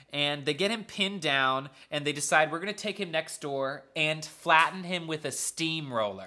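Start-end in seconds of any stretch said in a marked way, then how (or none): none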